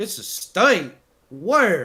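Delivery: very slow, drawn-out put-on Southern drawl. Retelling coworkers' questions about Rhode Island: imitating southern coworkers. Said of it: "Why'd you do a southern accent".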